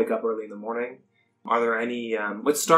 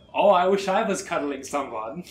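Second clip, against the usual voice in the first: put-on accent somewhere between Dutch and German; 6 semitones higher than usual. Speaker talking in character during the session, Dutch-German accent. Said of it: "It was somewhere between Dutch and German".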